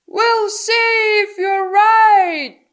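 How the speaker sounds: shrill, very loud, high-pitched yelling at full volume. Reading a story, a character yells as the engine starts: yelling. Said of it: "he yelled".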